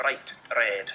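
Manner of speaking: Scottish r, tapped or rolled once. Teaching how Scots speakers pronounce their R, Scottish tapped R. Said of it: "It's called a tapped R".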